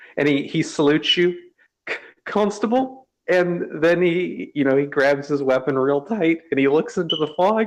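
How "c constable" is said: scared character voice, higher. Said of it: "you can hear him gulp and sniffle".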